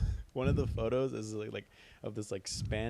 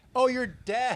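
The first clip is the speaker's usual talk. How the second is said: very loud, very high-pitched blurt; 14 semitones higher, 8 dB louder than usual. Quoting someone's tactless remark to a deaf woman, retelling it loudly. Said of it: "loud as hell".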